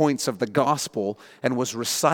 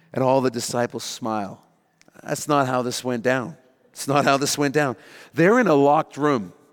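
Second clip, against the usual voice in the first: ordinary talk, nothing marked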